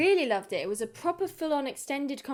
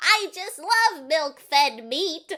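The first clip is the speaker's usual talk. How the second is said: overdone put-on goblin voice, higher and louder; 4 semitones higher, 7 dB louder than usual. Imitating a creature pretending to be a goblin: overdone put-on goblin voice. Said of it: "overcompensating trying to be a goblin".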